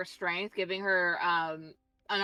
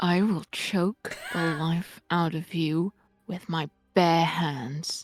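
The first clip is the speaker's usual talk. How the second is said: loud, an inch from the microphone; 3 semitones lower, 5 dB louder than usual. A character threatens another in a story scene, right up on the microphone. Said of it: "you sounded like you were an inch away".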